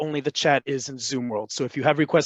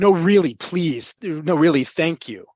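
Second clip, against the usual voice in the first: earnest, imploring, almost begging; 3 dB louder than usual. Explaining an expression to a listener, showing how it sounds: pleading, almost begging. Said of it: "sounds like you're pleading, like almost begging".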